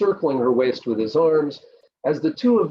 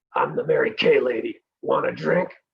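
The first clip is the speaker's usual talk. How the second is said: gravelly, raspy, rough-edged voice. Reading a story aloud, voicing a woman offering a drink: gravelly voice. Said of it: "said in a gravelly voice".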